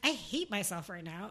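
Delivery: plain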